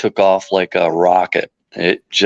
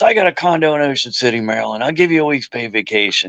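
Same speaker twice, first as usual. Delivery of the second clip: gruff, tough-talking voice, pitched up; 5 semitones higher than usual. Retelling the investor offering paid vacation: imitating a gruff man. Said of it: "and he's real gruff".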